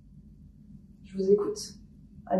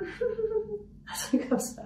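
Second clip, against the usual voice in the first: put-on very high, very slow, creepy horror-film little girl giggle. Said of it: "les rires de petite fille, de films d'horreur".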